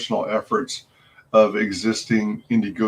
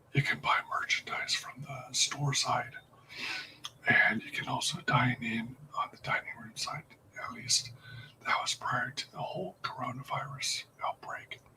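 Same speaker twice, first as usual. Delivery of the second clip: whispering, much quieter; 3 semitones higher, 15 dB quieter than usual. Streamer describing a restaurant to viewers, whispering. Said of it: "I'm now in a whispered voice".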